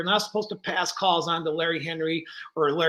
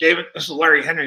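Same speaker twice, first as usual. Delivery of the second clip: put-on gruff voice, much louder; 7 dB louder than usual. Retelling a phone call from a former boss, imitating Larry Henry's gruff voice. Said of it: "He had a very gruff voice".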